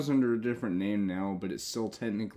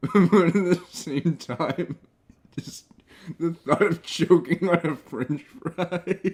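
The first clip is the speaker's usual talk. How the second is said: chuckling through words, higher and louder; 8 semitones higher, 9 dB louder than usual. Telling about almost choking on a french fry as a kid: laughing while talking. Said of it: "Again, sorry for laughing".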